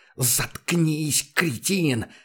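enraged, hissed with pure fury. Reading a novel, a man presses a pistol to a scientist's forehead: furious hiss. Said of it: "взбешенно прошипел Курт".

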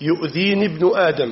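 plain

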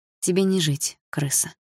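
ordinary delivery, nothing marked

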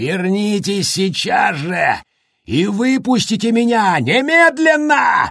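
shrill, very high, drawn-out roaring yell. Attacking a door, a man yells after the woman and boy as they leave. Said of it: "— заорал Джек".

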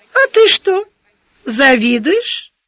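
sugary sweet tone. In an argument, one character asks another a question in a honeyed voice. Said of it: "медовым голоском спросила".

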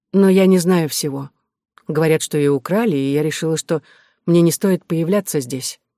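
ordinary delivery

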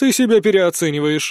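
with a snort. A woman responds to a man's bragging, snorting. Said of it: "фыркнула она".

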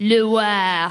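put-on baby crying in French accent. Narrator joking about how to tell where a baby comes from, baby crying in french accent. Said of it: "French babies cry in a French accent like this".

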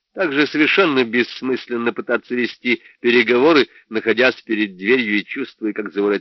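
plain reading voice

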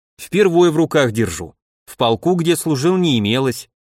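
ordinary delivery, nothing marked

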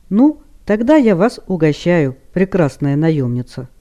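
ordinary delivery, nothing marked

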